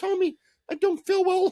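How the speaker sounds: very high, shrill, loud motherly voice. Retelling how tommy's mother reacted after he dosed her, imitating tommy's mom. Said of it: "she's like".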